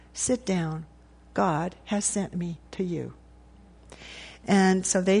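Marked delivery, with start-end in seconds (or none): 0.1-3.1 slow, authoritative and full of love. Speaker retelling a young girl's words at a fireplace, authoritative, love-filled voice. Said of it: "in a very authoritative voice, beautiful, love-filled voice".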